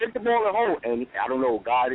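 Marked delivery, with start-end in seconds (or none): 0.0-0.8 acted-out very high yell at the top of the lungs. Retelling shouting advice at a player from a sports bar: imitating own yelling. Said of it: "I'm yelling at the top of my, my lungs".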